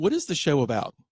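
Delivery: ordinary delivery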